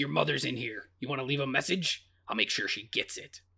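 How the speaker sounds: low, soft, hushed demonic voice. Recapping a scene where the demon taunts him, in a Demon Regan voice. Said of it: "good demon voice".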